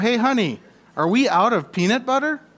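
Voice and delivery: mock high calling-out shout. A man searching the cupboard calls out to the woman, retelling a shout. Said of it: "He shouts out".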